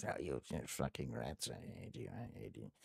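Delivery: very hushed, very quiet, swooping muttering under the breath. Voicing an unsteady character in the game: cursing under her breath. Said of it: "she's cursing under her breath".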